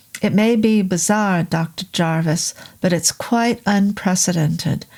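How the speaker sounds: usual speaking voice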